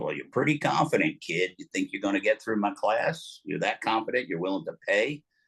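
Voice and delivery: put-on seasoned, old Western cowboy voice. Recounting a phone call from his stunt class teacher: old California stuntman cowboy voice. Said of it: "in that old California stuntman cowboy voice".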